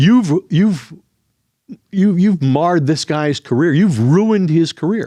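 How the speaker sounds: put-on berating scream with a sputtering start. Telling a story, the speaker quotes the trainer screaming at him: retelling screaming. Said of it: "he kept screaming".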